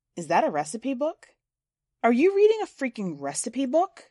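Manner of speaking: disbelieving, almost angry. Reading a story aloud, a girl questions another's book: almost angry with incredulity. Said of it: "in a voice that is almost angry with incredulity".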